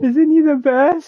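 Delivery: high, slow, loud gushing.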